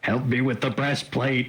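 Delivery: high calling-out voice. A player's character Uriel calls out to Flynn; bellowing. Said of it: "Uriel's gonna bellow at Flynn".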